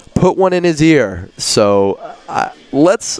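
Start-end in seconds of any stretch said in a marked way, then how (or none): 0.2-1.3 put-on raised, pitched-up yell. Retelling what the pitcher's dad yelled at the plate: imitating someone yelling. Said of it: "he yells".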